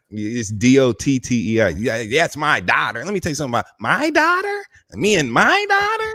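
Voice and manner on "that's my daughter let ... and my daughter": high voice with swooping, swinging pitch. Repeating the imitation when another speaker asks again: imitating Jackie. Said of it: "That's what she always say".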